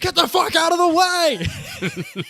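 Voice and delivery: put-on, shrill, very high screaming yell. Retelling running out in front of Matt's car as he pulls out: retelling a yell. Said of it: "I yell".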